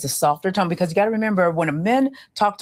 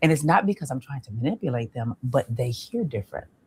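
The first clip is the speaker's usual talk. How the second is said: lowered pitch, lower voice; 6 semitones lower, 5 dB quieter than usual. Speaker demonstrating how they talk to men on dates: lowered voice. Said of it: "I lower my voice like this".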